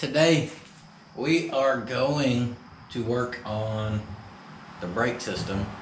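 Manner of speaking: unhurried, slow, deliberate, drawn-out delivery. Opening a build video with a sore back, talking slowly. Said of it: "I don't know why I'm talking so slow".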